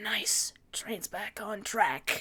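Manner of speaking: quiet, unhurried whisper.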